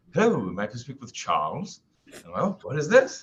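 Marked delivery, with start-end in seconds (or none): 0.1-1.8 terrible fake British accent, swooping. Imitating a voice the speaker hears: terrible accent impression. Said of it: "I'm going to do a terrible impression".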